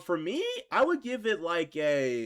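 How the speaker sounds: voice breaking and cracking mid-phrase. Giving a movie a rating out of ten, the speaker's voice cracks. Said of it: "that was a voice crack".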